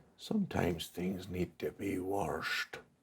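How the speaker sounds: effortful, labored voice. Voicing a woman at a pot who answers a visitor's questions, in a very labored voice. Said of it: "you hear in a very labored voice".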